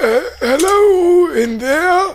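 put-on strained elderly voice. A game master voices a sergeant calling from the front: old, thin, strained Sergeant Sandrid voice. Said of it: "It sounds old and sort of thin and strained".

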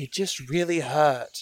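put-on British accent out of nowhere. Answering the party's questions in character: sudden British accent. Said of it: "it's got an accent now".

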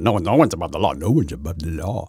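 low, soft, hushed cartoon dog voice. Complaining about an overused slogan, the speaker repeats it in a Deputy Dawg imitation. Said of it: "That's kind of my imitation of Deputy Dog".

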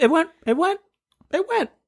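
voice climbing high. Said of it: "Why is your voice getting so high?".

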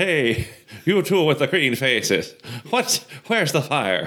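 fake Irish accent, pitched high. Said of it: "are firemen Irish now?".

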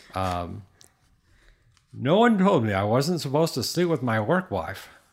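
words pushed out of one side of the mouth. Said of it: "That was a side mouth talker".

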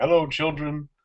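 cartoon cook character voice. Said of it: "chef from South Park".

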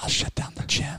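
close whisper. Acting out Ducey's answer to somebody in his ear, speak whispering. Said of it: "Why are we whispering?".

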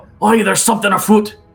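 very high, rushed, quick group shout. A game master voices dwarves turning around, yelling. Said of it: "And you hear them yell".

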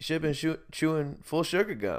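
put-on European accent. Retelling what the dentist said about a lost filling: imitating a European accent. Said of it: "he was European of some sort".

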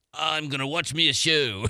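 put-on pirate voice. Picturing an older guy on a pier pulling out a spyglass: pirate voice. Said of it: "you had to do the pirate voice".

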